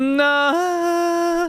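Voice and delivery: high head-voice falsetto. Showing off the truest falsetto on a single word: high falsetto. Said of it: "That's falsetto".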